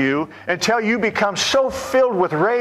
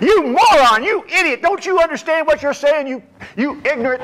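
mock beside-yourself ranting, screaming and hollering; 6 semitones higher than usual. Recounting yelling at people who couldn't hear him, retelling screaming and hollering. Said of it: "I'm screaming and hollering as if these people could hear me".

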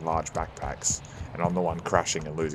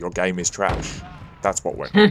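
usual speaking voice

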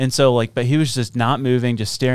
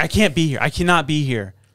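normal talking voice

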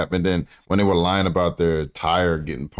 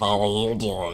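creepy, lurking creature voice; 4 semitones higher than usual. Imagining hearing that voice while walking down an alley: creepy Smeagol voice. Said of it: "His voice is creepy".

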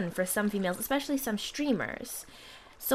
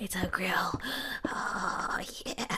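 mock creepy, breathy, hushed leering whisper; 4 semitones lower, 5 dB quieter than usual. Gamer imitating people who react creepily to their gaming, mock-creepy voice. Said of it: "really creepily".

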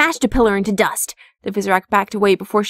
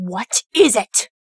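icy, cold, stern, hard voice. Stopping abruptly mid-sentence, she turns and coldly demands. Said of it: "Coldly, she demanded".

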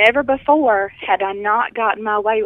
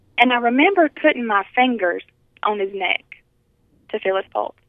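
plain

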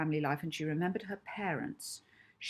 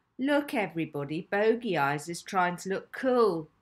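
sneering, taunting tone; 5 dB louder than usual. Hazel calls out to everybody about Molly, sneering. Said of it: "asked Hazel with a sneer".

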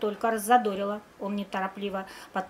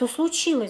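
worried, anxious, eager, pitched up; 5 semitones higher than usual. Her friend comes to school with teary eyes; she asks anxiously. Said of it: "взволнованно спросила Вика".

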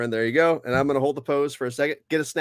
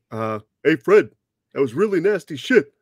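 cartoon caveman voice, louder; 5 dB louder than usual. Asked by another speaker to do Barney Rubble's drink taste test; Barney Rubble voice. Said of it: "can you do the Barney Rubble voice".

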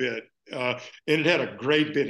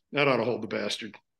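mock mutter under the breath, much lower pitch; 5 semitones lower than usual. Retelling what a man said right after wishing someone happy birthday: under his breath. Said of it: "Then under his breath".

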